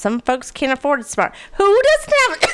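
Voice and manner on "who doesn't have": very high, strangled sputter, choking mid-word. Speaker mid-rant, suddenly choking on spit. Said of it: "just choked on my spit".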